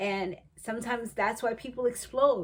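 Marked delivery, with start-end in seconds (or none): none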